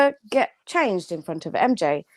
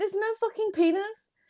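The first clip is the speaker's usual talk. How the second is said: loud, full-throated yelled exclamation; 8 semitones higher, 7 dB quieter than usual. Reacting loudly to a joke about bumper cars, shouting. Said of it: "I'm gonna stop shouting penis".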